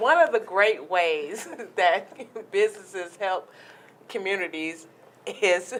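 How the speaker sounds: talking while laughing through the words. Trying to answer a question about businesses and the community, laughing while talking. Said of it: "I'm laughing".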